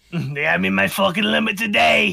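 put-on smoker woman character voice. Voicing a woman character talking to Agatha, in a smoker woman voice. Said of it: "Smoker it, voice".

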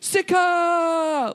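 very high, stretched-out, anguished yell. Explaining how a name should be said, yelled skyward like Captain Kirk. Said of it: "Something like Captain Kirk would yell to the sky on the planet that he's been abandoned".

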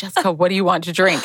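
put-on flirty, flirtatious voice. Retelling a bar night, imitating Stacy flirting with the bartender. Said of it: "flirting with the bartender".

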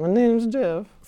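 put-on voice pushed to a very high pitch. Talking about a friend's 22 Jump Street avatar, the speaker quotes it: high-pitched Channing Tatum impression. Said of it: "Like in a really high-pitched voice".

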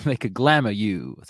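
put-on Southern Louisiana accent. Musing about what vampires can do, slipping into a louisiana accent. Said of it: "that was my Louisiana accent".

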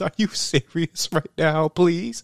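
put-on high, tearful, begging crying voice. Retelling a movie scene where she pleads with an officer: imitating someone crying. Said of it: "she's, like, crying".

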